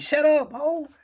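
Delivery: put-on very high, shrill, shrieking scream. Retelling yelling at someone on screen: imitating own screaming. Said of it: "I was screaming at the screen".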